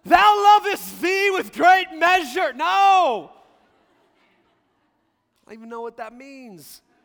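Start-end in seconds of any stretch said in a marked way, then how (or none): 0.1-2.5 fake grand English accent, high and loud. Describing how some people pray, the speaker mocks it in an English accent. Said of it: "start talking with an English accent".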